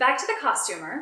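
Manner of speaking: plain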